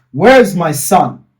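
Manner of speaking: loud voice that keeps swelling in volume. Retelling how mom kept asking for her son: imitating mom, volume rising. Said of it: "the volume, you know, starts going up".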